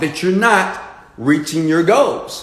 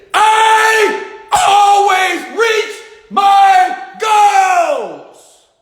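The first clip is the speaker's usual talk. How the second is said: very high, raised declaration with a long, stretched I; 4 dB louder than usual. Coaching listeners to say their goal aloud, demonstrating in a raised voice. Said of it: "Raise your voice. Come on. Raise it".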